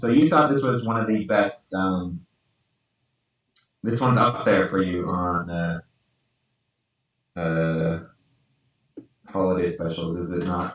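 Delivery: heavy sarcasm.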